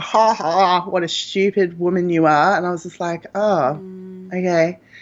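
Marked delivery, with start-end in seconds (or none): 0.0-2.6 play-acted, slow, derisive, belittling mocking laugh. Retelling how a junior doctor laughed at her question, imitating a mocking laugh. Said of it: "he just laughed at me like".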